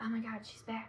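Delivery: quiet, hushed half-whisper with no voice. Retelling what two spirit women said as she walked up: retelling a half-whisper. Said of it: "they're just whispering".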